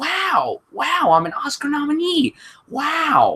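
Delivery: deliberately bad, slow, slightly high drawl. Joking that a co-writer is an Oscar nominee: terrible Owen Wilson impression. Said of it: "that impression is absolutely terrible".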